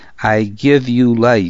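ordinary delivery, nothing marked

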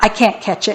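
plain

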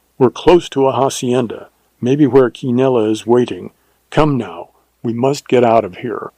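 ordinary delivery

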